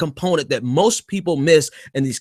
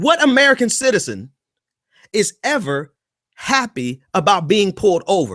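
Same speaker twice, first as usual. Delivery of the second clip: usual speaking voice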